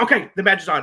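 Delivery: acted, heated, loud angry outburst, temper snapping. Retelling how Seth accepted the match: imitating someone saying it angrily. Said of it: "in a moment of anger was like".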